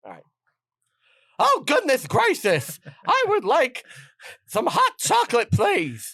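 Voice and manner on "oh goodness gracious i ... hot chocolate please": very high, slow, swooping cartoon character voice. Agreeing to do one impression for the others to guess, do an impression of an actor who did cartoons. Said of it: "one impression".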